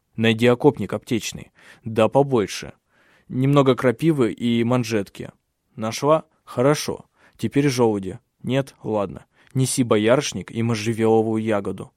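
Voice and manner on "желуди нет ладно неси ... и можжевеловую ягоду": ordinary delivery, nothing marked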